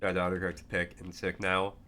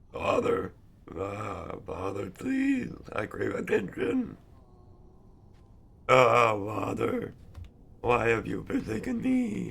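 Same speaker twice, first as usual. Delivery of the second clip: loud, swooping, drawn-out talking dog voice; 4 semitones higher, 5 dB louder than usual. Naming a streamer whose dog voice he likes, the speaker imitates it: Vinesauce dog voice. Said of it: "I like his dog voice".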